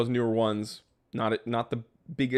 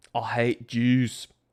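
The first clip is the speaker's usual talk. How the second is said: put-on Scottish accent. Answering a chat comment about his accents with an impression: Mel Gibson Scottish accent. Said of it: "my impression of Mel Gibson as a Scotsman".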